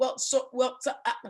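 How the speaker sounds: mimicked nervous stammering. Retelling how a man answered a question about kids and marriage: imitating nervous stammering. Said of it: "he responded this way".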